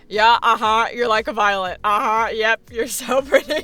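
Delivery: put-on sarcastic voice. Retelling how the student delivered the line, imitating a sarcastic eye-roll. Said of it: "You were like".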